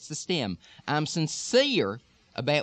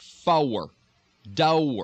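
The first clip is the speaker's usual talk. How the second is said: heavy, thick Texas accent and pronunciation; 2 semitones lower, 3 dB louder than usual. Demonstrating R-sound words for listeners, in heavy Texas dialect. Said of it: "in real heavy Texas dialect".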